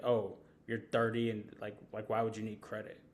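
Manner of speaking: mock deadpan sarcastic voice. Retelling a sarcastic remark said with a straight face: imitating Javi's deadpan sarcasm. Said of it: "Javi will say some sarcastic shit like".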